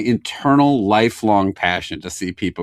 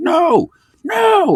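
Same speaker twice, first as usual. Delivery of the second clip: play-acted, very high, loud yell; 5 dB louder than usual. Recalling being sucked into a seat by G forces, retelling his own yelling. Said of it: "I'm like yelling".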